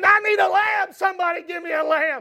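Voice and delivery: put-on desperate, begging tone. Retelling the story of a man seeking a lamb as darkness falls, acting out desperate begging. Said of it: "He's begging".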